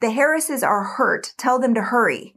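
ordinary talk

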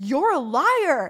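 very loud high yell with liar drawn out. Retelling an argument with a man who yelled at them, re-enacting their own yell. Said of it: "I'm like yelling at him".

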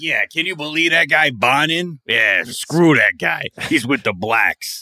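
affected New Yorker accent. Imagining LA City Council members talking, put-on New York accent. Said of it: "if they just affected a New York accent".

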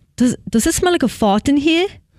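put-on English accent. Trying an English accent by channeling Evan's usual sayings: English Evan impression. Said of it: "I'm gonna channel my inner Evan".

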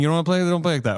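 mock crying, words pushed out through sobs. Retelling a documentary scene, imitating Michael Jordan crying. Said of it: "Him crying, going".

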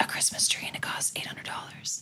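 soft, unvoiced whisper close to microphone. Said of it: "I was, like, whispering to it".

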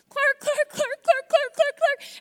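very high, very loud, shrill crying scream with sobs. Retelling calling out to her husband, acting out screaming and crying his name. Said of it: "like screaming his name, crying his name".

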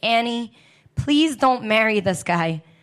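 pleading, imploring, begging tone. The speaker retells a phone call from the speaker's mom, imitating mom pleading. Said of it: "she begged me".

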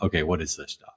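put-on low, curious, old-school guy voice.

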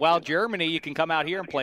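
ordinary talk, nothing marked

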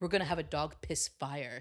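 normal talking voice

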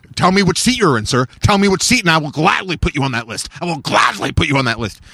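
high, on-edge, exasperated, irritated snap. Retelling a lady snapping at a man about his seat: imitating someone snapping. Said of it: "immediately just snaps".

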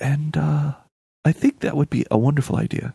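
put-on public radio announcer voice. Replying in a group conversation after being teased, in an NPR voice. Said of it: "That's my NPR voice".

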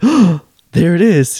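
sharp gasp, then slow, high, drawn-out acted exclamation. Retelling what a woman said as she gasped, retelling a gasp. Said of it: "I hear Kayla gasp and say".

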